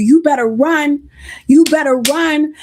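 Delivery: plain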